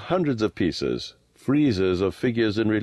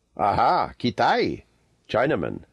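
said proudly. Answering a stranger from the hills, Abdullah speaks proudly. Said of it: "said Abdullah proudly".

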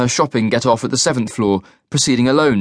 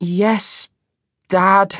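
self-conscious, sheepish, embarrassed, slightly higher pitch; 8 semitones higher than usual. A daughter answers her father, who is just checking on her, embarrassed. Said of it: "the suspicion now replaced by embarrassment".

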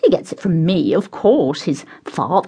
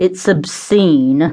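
surly, sullen, grumpy tone; 4 dB louder than usual. Eyes fixed on his plate, a man cuts into his companions' cheerful exchange, surly tone. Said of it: "Cuthbert announced in a surly tone".

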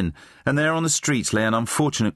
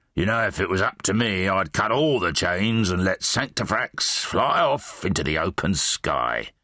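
bitterly resentful tone; 3 semitones lower than usual. In a read story, a character adds a remark, bitter. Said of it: "he added bitterly".

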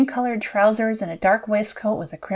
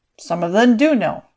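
cool, unruffled, self-assured delivery, raised pitch; 5 dB louder than usual. He answers her claim that the priest would know what he is, coolly. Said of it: "he answered coolly".

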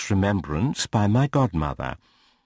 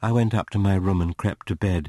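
usual speaking voice

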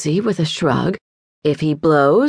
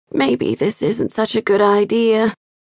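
quiet murmuring. Molly, struggling to shove a little boy's foot into a stiff shoe, murmuring. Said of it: "murmured Molly".

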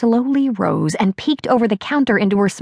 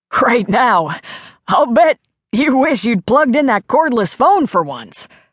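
laughing so hard, hardly speaking, through laughter; 2 semitones higher than usual. Elmer, cackling at what happened, laughing so hard he can hardly speak. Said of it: "He was laughing so hard".

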